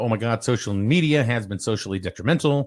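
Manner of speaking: plain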